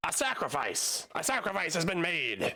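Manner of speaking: high, hooting little goblin creature voice. Voicing a goblin running out with hands in the air: hooting and hollering goblin. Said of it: "this goblin runs out and he goes".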